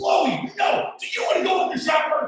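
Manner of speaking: put-on screaming, very high pitched. Retelling running after a dog at a family: imitating himself screaming.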